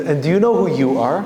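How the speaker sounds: shaky, trembling, quavering, wavering voice. Retelling a story, voicing the king's question to her in a trembling voice. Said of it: "he says with a trembling voice".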